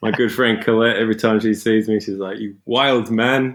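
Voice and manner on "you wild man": put-on spoken with a Scottish accent. The speaker quotes what a good friend says on seeing them, Colette's Scottish accent. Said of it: "in a Scottish accent".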